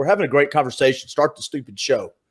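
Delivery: ordinary talk, nothing marked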